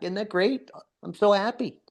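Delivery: openly sarcastic delivery. Talking to others about needing more help with healing: sarcastic. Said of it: "Why do I hear more sarcasm in there".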